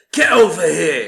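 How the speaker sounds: put-on very loud, aggressive, barking Cockney accent. Quoting the prison guard from the movie: imitating aggressive Cockney accent. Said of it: "aggressively, like, English Cockney accent".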